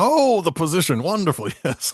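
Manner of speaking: high-pitched giant ogre voice. A storyteller acts out a giant welcoming a visitor who answered his advertisement. Imitating an ogre. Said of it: "I don't know if I want to make the giant speak like this".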